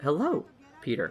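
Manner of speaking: staticky, glitchy AI voice like broken radio signal. Voicing the suit's voice as the suit switches on: staticky Karen suit voice. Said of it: "it's staticky, and it's weird".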